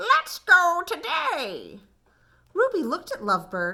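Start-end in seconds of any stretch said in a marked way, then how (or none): 0.0-1.8 high, squawky voice, swooping up and down. Reading a story, Lovebird speaks up to Ruby, squawky Lovebird voice. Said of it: "in a squawky voice Lovebird said".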